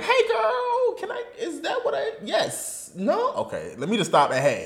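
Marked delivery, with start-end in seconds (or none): 0.1-3.3 very high, slow, hesitant, unsure sing-song. Retelling an interview moment, imitating Michelle Obama unsure what to say. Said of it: "genuinely like".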